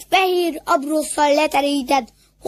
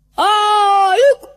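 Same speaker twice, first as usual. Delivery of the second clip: hoarse roar, higher and louder; 6 semitones higher, 5 dB louder than usual. The wolves answer their leader's call together, roaring hoarsely. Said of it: "Ordították rekedten a farkasok".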